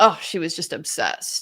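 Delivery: spoken with open disgust and distaste. Quoting a man calling a girl obsessed, mock-disgusted. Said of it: "The way that he said that with like this disgust".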